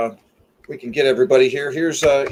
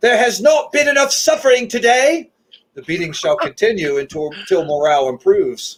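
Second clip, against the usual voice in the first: yelling in a put-on British accent; 6 semitones higher, 3 dB louder than usual. The speaker acts out what they yelled while walking around, yelling in a British accent. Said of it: "yelling in a British accent".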